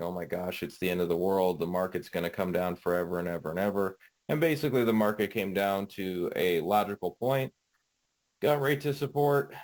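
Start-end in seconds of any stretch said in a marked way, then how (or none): none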